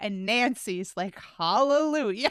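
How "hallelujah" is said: play-acted, high, sarcastic little cheer. Retelling a scene from the episode, imitating Nancy's sarcastic tone.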